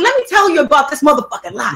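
fired-up, hyped, upset, worked-up outburst. Speaker retells what they told their younger siblings: retelling getting hyped and upset. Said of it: "I got really hype and upset".

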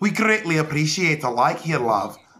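put-on Irish accent. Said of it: "That's Irish".

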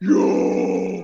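loud, growly caveman sex noises and grunting. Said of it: "like, cavemanish".

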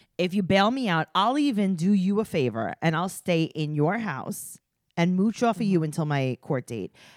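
ordinary talk, nothing marked

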